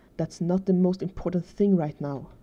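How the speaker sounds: usual speaking voice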